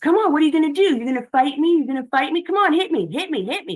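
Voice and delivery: mock, very high, shrill, loud shouting. Retelling how the dad yells to provoke a fight: imitating someone yelling. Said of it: "he yells".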